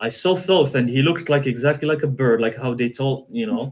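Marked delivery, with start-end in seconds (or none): none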